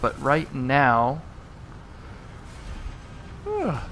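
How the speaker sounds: slow talking through a yawn. Talking through a build plan, yawning while talking. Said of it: "sorry, yawning".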